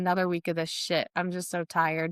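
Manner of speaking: normal talking voice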